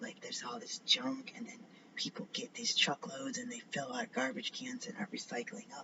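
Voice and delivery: quiet secretive whispering. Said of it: "Why am I whispering?".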